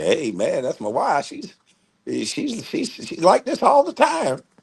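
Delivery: carefree, swooping drawl. Retelling what a man said about his wife: imitating a carefree husband. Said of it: "that man ain't have a care in the fucking world".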